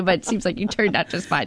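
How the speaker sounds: plain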